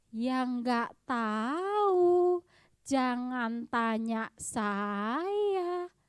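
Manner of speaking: mocking copied tone, drawn out. Complaining about how Krisel answers questions, imitating Krisel's intonation. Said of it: "Serius dia begitu, logatnya juga begitu".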